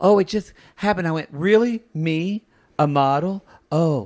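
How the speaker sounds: play-acted, falsely humble aw-shucks manner. Imitating a contestant's put-on modest act about being a model. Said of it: "he puts on this act a little bit like".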